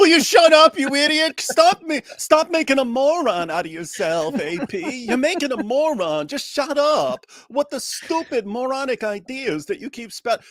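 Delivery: very high, slow snaggletooth voice. Doing an impression of a commentator: Norman Finkelstein impression. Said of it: "the snaggletooth impression of him that I do".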